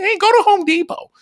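put-on grouchy woman voice, very high. A podcast host imagining a listener's Saturday plays the wife in a put-on grouchy wife voice. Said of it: "That's my grouch wife voice".

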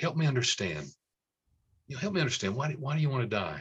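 tender, careful voice. Showing the right way to ask someone near hopelessness a question, tender and careful. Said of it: "tenderly, carefully".

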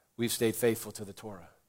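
plain

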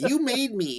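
very high, nerdy, villainous put-on voice. Quoting a movie villain's line: imitating Jason Schwartzman's nerdy voice. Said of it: "he's got this nerdy voice".

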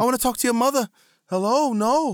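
put-on shocked, bewildered, loud, very high Boston accent. Talking about The Happening, shocked Mark Wahlberg Boston accent. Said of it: "mixed with his Boston accent".

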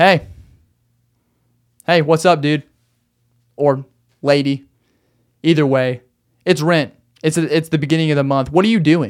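firm, really stern, blunt, no-nonsense voice. Telling a tenant that rent is due at the start of the month, really stern. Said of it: "I need to be really stern".

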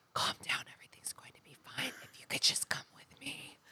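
soft, eerie, barely voiced whisper. Retelling what people in a creepy house say: imitating a whisper. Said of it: "Why are we whispering?".

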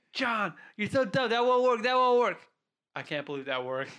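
put-on screaming, high. Retelling how Tio screamed at John during a test run, imitating Tio screaming. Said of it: "Tio was like screaming at my face".

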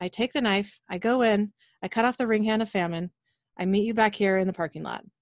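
plain

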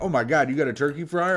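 mock thrilled, excited voice. Imagining how a neighbor would react to a turkey fryer: imitating someone thrilled. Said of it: "would have been fucking thrilled".

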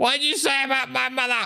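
very high, distant-sounding frog creature voice. Narrating the game, the speaker voices a bullywog heckling from the distance in a bullywog voice. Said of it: "you just hear a bullywog in the distance go".

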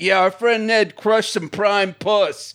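macho gym-bro voice. Imagining the Try Guys pumping iron and bragging: imitating the Try Guys as macho gym bros. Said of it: "if they'd been like".

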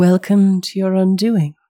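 soft chuckle while speaking. Voicing a half-elf who speaks to a player, laughing softly. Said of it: "half-elf laughs softly to himself and says".

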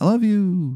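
put-on talking-car voice, pitched way up. Voicing a car speaking through its radio: talking car voice. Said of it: "a car voice".

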